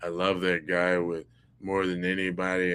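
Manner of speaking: mock flat delivery, no inflection. Retelling what a man said without inflection, imitating his monotone delivery. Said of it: "That was so monotone".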